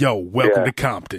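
very low, deep-set voice. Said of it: "He sounded like this".

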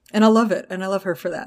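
ordinary delivery

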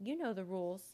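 plain

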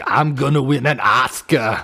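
put-on Austrian accent in an action-star style voice. Retelling Arnold's answer when asked about Junior, doing an Arnold impression. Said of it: "he's like".

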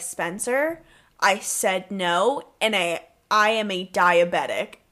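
completely serious, low, slow, acted dead-serious tone. Retelling her reply to his begging: imitating someone dead serious. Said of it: "she gets so serious".

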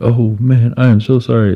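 mock sheepish apology, very slow. Retelling a man who opened the speaker's car door by mistake, imitating an embarrassed apology. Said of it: "just gets all embarrassed".

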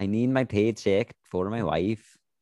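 put-on accent that sounds Swedish. Voicing a man who just wants his paycheck, in a Swedish-sounding accent. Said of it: "Your guy sounds more Swedish".

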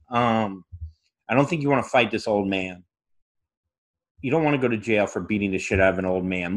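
acted calm, soothing tone. Retelling calmly talking someone out of fighting an old man, calm de-escalation. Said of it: "because of how calm I came up there".

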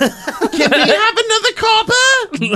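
squeaky, very high, slow put-on character voice.

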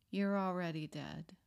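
put-on whisper, as if to oneself. Recalling the night of deciding to go back to rehab, whispering to self in the mirror. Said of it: "I whispered to myself".

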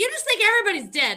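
shrill, high, loud, mad, exasperated voice. Retelling what Texan says when mad at this talk: imitating Texan getting mad. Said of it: "Texan gets so mad at me".

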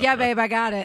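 dismissive, brushing-off tone. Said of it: "without sounding like a butthole because it's just like".

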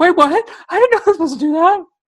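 very high, fast panicked squeal.

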